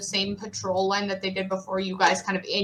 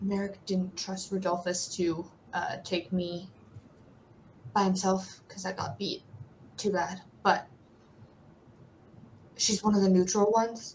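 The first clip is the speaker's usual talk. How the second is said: whispered, much quieter. A character whispers back to a player who messaged him, very quiet whisper. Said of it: "it's a very quiet whisper back to you".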